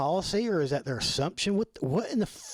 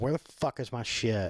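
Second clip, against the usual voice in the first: put-on angry, irritated tone, lower; 7 semitones lower than usual. Imagining sitting around for two days waiting, acting out being pissed off. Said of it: "pissed the fuck off going".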